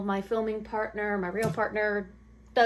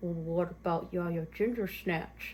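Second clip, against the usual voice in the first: muttered under breath, lower and quieter; 4 semitones lower, 6 dB quieter than usual. Retelling the father-in-law's name suggestion: imitating a mutter under breath. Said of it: "muttered under his breath".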